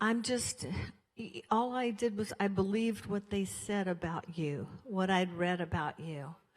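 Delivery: normal talking voice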